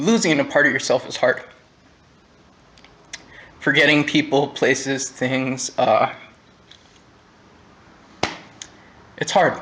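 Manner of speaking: emotional, voice catching. Speaker admitting he can't remember concerts with friends, getting choked up. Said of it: "I'm getting a little choked up here".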